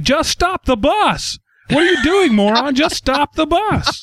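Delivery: put-on very high, frantic screaming rant. Retelling how a man screamed at the TV during a movie, mock screaming. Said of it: "he's literally screaming at the TV".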